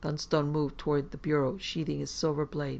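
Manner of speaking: ordinary delivery, nothing marked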